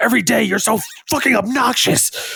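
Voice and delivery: very high, high-pitched scolding yell. Retelling hearing your dad at night scolding the dog, imitating dad yelling. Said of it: "he's yelling at my dog".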